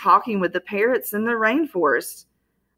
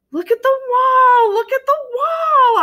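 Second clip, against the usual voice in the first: tiny, very high, loud hamster squeaks; 5 dB louder than usual. Trying to warn someone who just entered to look at the wall, squeaky hamster-like voice. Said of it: "I squeaked".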